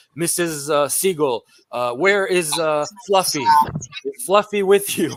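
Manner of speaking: put-on Arabic accent, slow and halting speech. Retelling what the attackers said when they came in: imitating broken hebrew with arabic accent. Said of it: "spoke, like, broken Hebrew with an Arabic accent".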